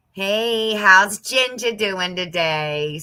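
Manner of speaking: put-on Boston accent. Recalling a man from boston who called the speaker ginger: imitating a boston accent. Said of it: "So he had that Boston accent".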